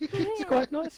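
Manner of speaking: very high squeaky guy voice. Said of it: "sound like the squeaky guy out of Ali G".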